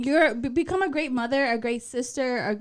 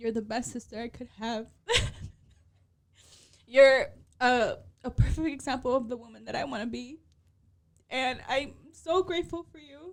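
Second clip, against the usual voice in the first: tearful speech, crying through the words; 4 dB quieter than usual. Speaker tells her sister happy birthday and that she's grateful, crying. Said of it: "I'm like legit crying".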